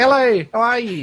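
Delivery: New Zealand accent. A speaker demonstrates how New Zealanders speak, in a New Zealand accent. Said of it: "That's a New Zealand accent".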